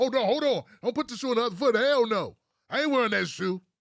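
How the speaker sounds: furious, high-pitched angry voice.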